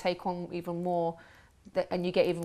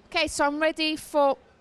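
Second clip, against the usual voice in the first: very high, loud shout; 10 semitones higher, 6 dB louder than usual. Calling out to someone sitting far away from you, shouting. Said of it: "I shouted, sorry".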